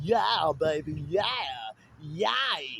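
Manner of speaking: low, slow drawl with yay stretched out. Speaker wishing he could change his voice, in an Austin Powers voice. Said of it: "if I had Austin Powers' voice".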